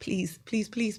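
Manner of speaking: soft, whispered, hushed pleading. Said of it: "I'm like".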